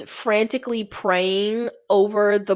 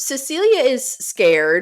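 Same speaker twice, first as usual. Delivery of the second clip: normal talking voice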